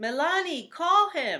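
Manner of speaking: very loud, high-pitched, excited call-out yell. Giving the last example sentence, yelled out, excited. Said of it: "I yelled it out. I was excited".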